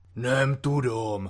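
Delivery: contemptuous, scornful, dismissive tone. A man answers a maid who asked in Hungarian; contemptuous. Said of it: "řekl opovržlivě vodička".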